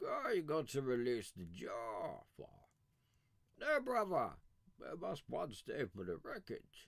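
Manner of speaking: villain voice with wide, swooping pitch. The speaker tries the closest he can get to a Bane impression. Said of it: "The Bane".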